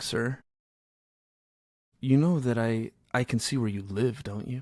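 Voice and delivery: mock dead calm, dropped way down, deep low voice. Retelling a tense phone call, the speaker quotes a guy by mimicking a real calm voice. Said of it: "He just says it like real calm".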